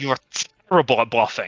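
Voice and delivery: badly done, audible stage whisper. Retelling a half-whispered remark at the table that everyone could hear: bad half-whisper. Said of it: "I like badly whisper".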